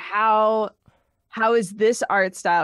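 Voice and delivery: ordinary talk, nothing marked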